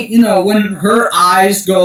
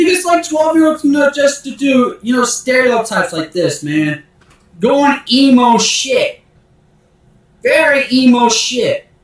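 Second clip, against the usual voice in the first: worked-up, emotional, high-pitched; 7 semitones higher than usual. Arguing back at someone who mocked their age, emotional. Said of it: "you're kind of very emotional right now".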